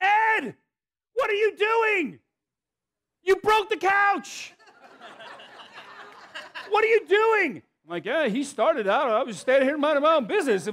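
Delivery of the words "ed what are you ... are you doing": put-on shrill scolding yelling. Retelling mom walking in on a fight and yelling at Dad, imitating her yell. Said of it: "She's yelling".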